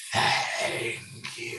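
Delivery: faint, breathy, barely audible whisper. Narrating a game, voicing what a player hears after pocketing a talisman: faint voice. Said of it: "you hear a faint voice".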